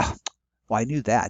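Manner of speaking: normal talking voice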